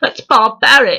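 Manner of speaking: exaggerated, laid-on-thick posh English accent, pitched high. Retelling a film scene, quoting Hermione in her biggest English accent. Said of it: "in the biggest English feminist accent she can do".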